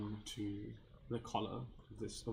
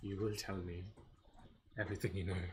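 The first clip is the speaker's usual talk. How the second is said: deep-chested, gravel-edged, almost gravelly voice. Voicing a player character demanding answers from a man: deep, almost gravelly voice. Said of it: "in this kind of deep, almost gravelly voice".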